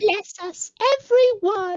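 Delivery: put-on very high-pitched little kid voice. Friends working out who someone sounds like, one quotes him: Tiny Tim voice. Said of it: "The crippled kid from uh the Christmas Carol movie".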